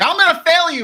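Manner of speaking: acted drunk man's scream, high-pitched. Retelling a drunk man screaming at them, imitating his drunken scream. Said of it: "screaming at us like".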